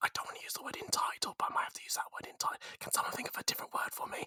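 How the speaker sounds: hushed whisper, barely audible, said as an aside. Speaker talking about the photographer, searching for a word, whispering. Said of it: "I don't know why I'm whispering".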